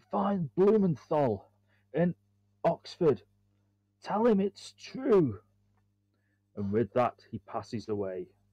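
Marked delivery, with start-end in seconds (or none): 0.1-5.4 high, gurgling, dying voice on a last breath. The narrator voices a dying man grabbing Amelia's hand: Forsyth's gurgling dying words.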